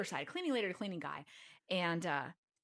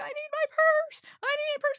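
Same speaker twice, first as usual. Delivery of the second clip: shrill, very loud, frantic, panicked high voice; 9 dB louder than usual. Retelling begging the pilot and stewardess to get a bag back, mock-panicked pleading. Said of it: "And I'm freaking out".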